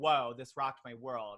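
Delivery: plain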